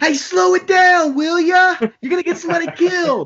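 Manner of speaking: acted-out shrill hollered shout, very high pitch. Retelling how the driver leaned out the window at a slow car: imitating someone yelling. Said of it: "leaned out the window and started yelling".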